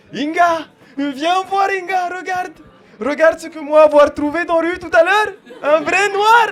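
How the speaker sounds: put-on very high, loud botched Polish accent. Imagining a man telling his wife Inga that evening: bad Polish accent. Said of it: "mon accent polonais il est pourri".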